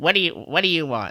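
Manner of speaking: put-on bitchy, dismissive, brushing-off receptionist-style voice. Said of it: "She's real bitchy".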